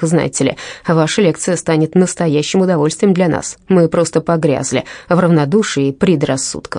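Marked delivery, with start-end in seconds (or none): none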